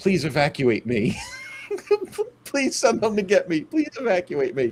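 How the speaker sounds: tearful crying plea through sobs, high and swooping. Describing looking into the camera from a wooden box, crying, pleading. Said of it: "you start crying and you say".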